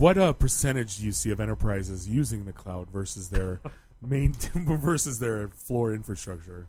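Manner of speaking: serious voice. Rephrasing a question as a very serious question: put-on serious voice. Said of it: "When Bob talks in a serious voice".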